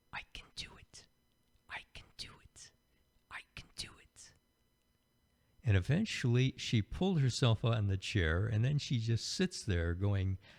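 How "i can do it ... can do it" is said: put-on tiny, whispered small child's voice. Retelling a small girl pulling herself up onto a huge chair, in her little child's voice. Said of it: "I hear her this little voice saying".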